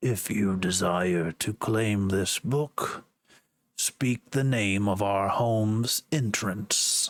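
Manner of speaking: low, eerie demonic voice. Narrator voices a book speaking inside the listener's head, eerie demonic voice. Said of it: "almost eerie demonic voice in your head that says".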